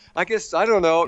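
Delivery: put-on giggly, careless, high laughing brush-off. Retelling a man's answer while his movie fell apart, imitating him laughing. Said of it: "he's just laughing like".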